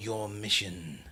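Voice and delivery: sinister, calculating put-on villain voice. Trying to do an impression of his voice: calculating impression voice. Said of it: "His voice is just so calculating, and I'm trying to do an impression of it".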